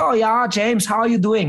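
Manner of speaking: put-on German accent. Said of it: "That's not a Chinese accent".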